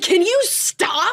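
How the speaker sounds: very high, loud, full-on scream. Retelling how she screamed at someone to stop readjusting her: imitating her own scream. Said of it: "screamed at her one time".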